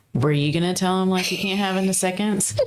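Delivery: normal talking voice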